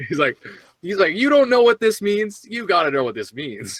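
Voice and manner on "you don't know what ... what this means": high, mocking, in-your-face taunting tone. Retelling how Jim Carrey spoke, laughing: imitating Jim Carrey mocking. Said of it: "the all, all mocking tongue".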